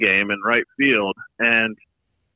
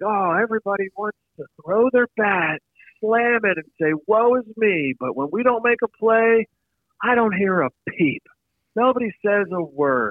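very high-pitched ranting scream at top of lungs; 9 semitones higher than usual. Recalling the moment a water bottle exploded against the wall, retelling a scream. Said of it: "I just scream at the top of my lungs".

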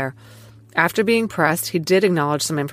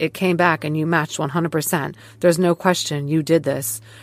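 ordinary talk, nothing marked

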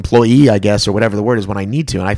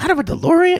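clumsy, badly done squeak, voice pushed very high. Repeating one line of the bad Michael J. Fox impression. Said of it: "Just that line when he's like".

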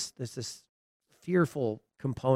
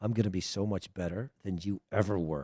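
put-on menacing child's voice, quieter; 5 semitones lower, 6 dB quieter than usual. Retelling what a five-year-old daughter said up close: imitating a child's menacing voice. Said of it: "And in this voice".

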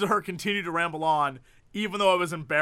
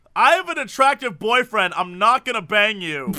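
loud shout at the top of the lungs; 4 semitones higher, 6 dB louder than usual. Recounting a woman who shouted at him in front of the room, imitating a top-of-lungs shout. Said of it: "at the top of her lungs".

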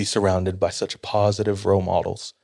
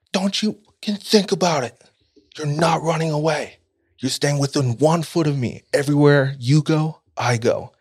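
mock, high-pitched, hard screaming tirade; 7 semitones higher than usual. Retelling one person screaming orders at another: imitating someone screaming. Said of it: "starts screaming at him".

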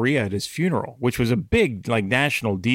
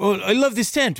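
put-on French accent, higher; 9 semitones higher than usual. Retelling what a group of Canadians at the beach asked: imitating a French accent. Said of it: "in French accents".

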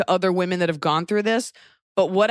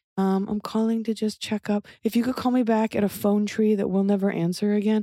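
flat, worn-out, beaten-down robot voice; 2 semitones higher than usual. Imitating callers who phone to check up, mimicking a beaten-down robotic caller. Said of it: "They all just sound like kind of beaten down".

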